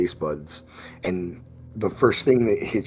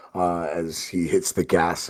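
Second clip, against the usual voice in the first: ordinary delivery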